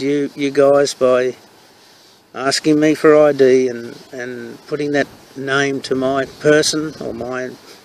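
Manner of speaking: normal talking voice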